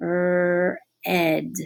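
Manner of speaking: drawn-out, slow sounding out of sounds. Demonstrating how to sound out a labeled word aloud, slowed-down sounding out. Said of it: "I'm going to slow down".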